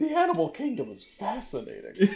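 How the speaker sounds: dopey put-on sing-song voice. In a role-play, slipping back into the character's dumb voice. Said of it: "He just slips back into his dumb voice".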